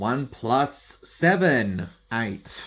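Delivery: dry, sarcastic, slow, drawn-out delivery. Explaining how two card levels add up: sarcastic tone. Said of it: "I sound so sarcastic".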